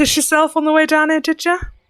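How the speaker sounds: put-on light, gentle Cockney accent. Voicing the fairy Ceridwen greeting a player: soft Cockney accent. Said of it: "A soft Cockney accent".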